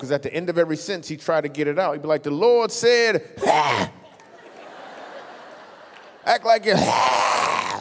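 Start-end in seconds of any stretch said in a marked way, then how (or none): 2.2-7.8 very slow, angry preacher voice, phlegmy hacking ha at ends. Imitating the preacher at Grandma's church: mock-angry preacher clearing throat. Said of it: "He was mad because he had some phlegm caught in his throat".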